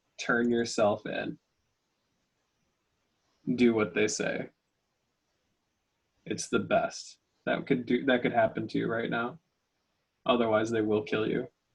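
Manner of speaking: hushed, whispered voice. Voicing a message heard in someone's head: hushed whispered voice. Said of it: "a hushed, like, whispered voice in his head".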